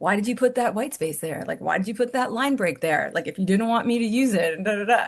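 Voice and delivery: ordinary delivery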